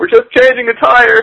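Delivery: very high, shrill shout.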